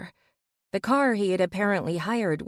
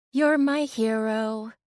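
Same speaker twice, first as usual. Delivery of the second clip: joking put-on high-pitched voice, word hero drawn out; 3 semitones higher than usual. Reading a story aloud, the narrator teasing her rescuer: high-pitched voice. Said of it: "I said in a high-pitched voice".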